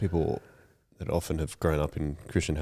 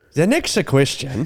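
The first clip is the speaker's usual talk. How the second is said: put-on Irish accent, much higher; 10 semitones higher, 9 dB louder than usual. After the other player calls out 'irish', trying an attempted irish accent.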